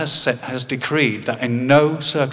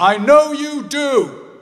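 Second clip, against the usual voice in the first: acted, loud voice, very high pitched; 14 semitones higher, 5 dB louder than usual. Retelling what their dad said to them: retelling dad's loud remark. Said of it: "in a loud voice".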